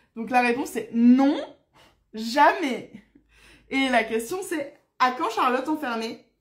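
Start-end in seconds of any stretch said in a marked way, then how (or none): 5.0-6.2 short, curt, disagreeable tone. Repeating a question the way it was received, in a mock-unpleasant curt tone. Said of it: "je le dis avec un peu ce ton-là, c'est la manière dont je l'ai reçu".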